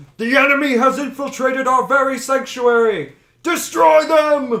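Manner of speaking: very high, very loud, shrill villain cry. Narrator voicing Solomon as he spots the players in the room, shouting. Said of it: "points at you and shouts".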